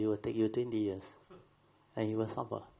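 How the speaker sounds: normal talking voice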